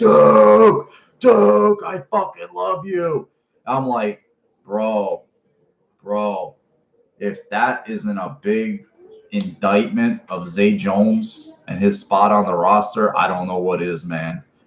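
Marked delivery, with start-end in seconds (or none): 0.0-3.3 mock raw, rough, very high-pitched screaming. Retelling a clip from after the game: imitating Josh Allen screaming. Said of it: "He was screaming".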